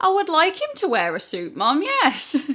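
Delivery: stating-the-obvious tone, high and sing-song. Retelling answering her mum about dressing for a wedding: retelling a stating-the-obvious voice. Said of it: "like stating the obvious kind of voice".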